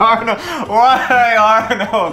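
loud, high, helpless laughing through the words.

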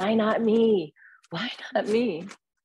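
top-of-the-lungs scream, high, very slow, drawn-out. Retelling driving home and gripping the wheel: imitating own past screaming. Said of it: "just screaming at the top of my lungs".

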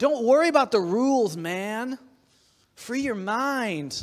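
relaxed, carefree, laid-back hippie voice. Speaking to listeners, the speaker slips into a hippie voice. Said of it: "I sound like a hippie today".

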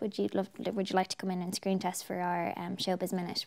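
ordinary delivery

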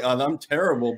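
ordinary talk, nothing marked

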